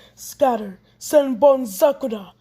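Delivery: ordinary delivery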